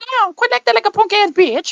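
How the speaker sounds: very high, buzzing mosquito-like voice. Retelling what she said to someone, imitating a high mosquito-like voice. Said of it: "the mosquito sound".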